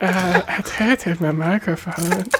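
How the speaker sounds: slow, nerdy mocking voice. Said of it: "like, nerdier somehow".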